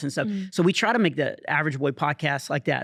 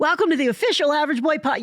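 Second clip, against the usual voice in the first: put-on very high, middle-schooler-like kid voice; 12 semitones higher, 4 dB louder than usual. Recalling a studio intro, the speaker makes his voice a little higher. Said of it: "I started to make my voice a little higher".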